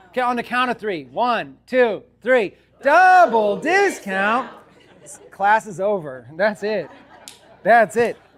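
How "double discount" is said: loud call-out delivery. Saying the phrase on a count of three, like Brian. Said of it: "say it like Brian".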